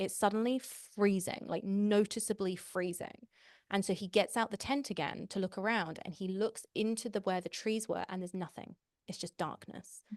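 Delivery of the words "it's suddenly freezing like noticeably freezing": ordinary delivery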